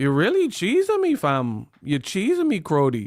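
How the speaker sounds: swooping put-on Toronto accent. Complaining about places where the dialect hides anger, imitating a Toronto accent. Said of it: "I don't like the places where the accent".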